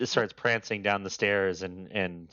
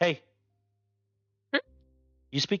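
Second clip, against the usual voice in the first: curious, inquisitive cat voice, much higher pitch; 11 semitones higher than usual. In a story, the cat wakes and speaks to its owner: curious cat voice. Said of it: "like very wide-eyed and curious".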